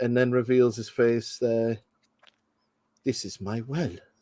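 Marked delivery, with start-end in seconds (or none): 3.0-3.9 soft, hushed delivery. Quoting a film line while watching, then praising the actor: Omar Sharif voice. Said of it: "Such a soft voice".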